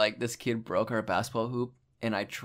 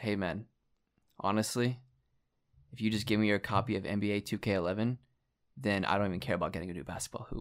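quieter whisper under the breath; 4 dB quieter than usual. Recounting an aside to a boy whose family broke his hoop: retelling an under-breath whisper. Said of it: "And then I whispered under my breath".

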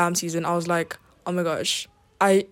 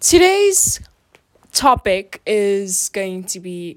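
full-on scream right into the microphone; 4 dB louder than usual. A podcast host introducing today's topic, screaming into the microphone. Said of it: "sorry, I'm screaming".

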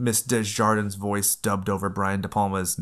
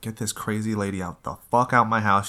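ordinary talk

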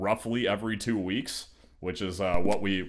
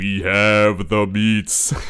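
put-on deep booming voice, louder; 8 dB louder than usual. Doing a requested Gladiator line: Ving Rhames voice. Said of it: "so do that line in Ving Rhames' voice".

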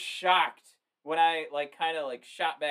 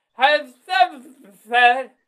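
high, very loud voice blurted through a full mouth; 8 semitones higher, 10 dB louder than usual. Imitating what a wrestler might say on TV: Cartman voice with mouth full of pasta. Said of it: "Why does he sound like Cartman with a face full of pasta?".

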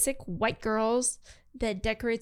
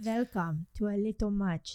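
put-on vampire count voice; 3 dB quieter than usual. Podcast host opening the show: vampire voice. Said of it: "That's my vampire voice".

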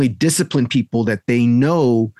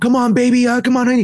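mock, very high-pitched yelling; 12 semitones higher than usual. A coach recalls a parent yelling across the mat; imitating a shouting parent. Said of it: "Just shouting and yelling the entire time".

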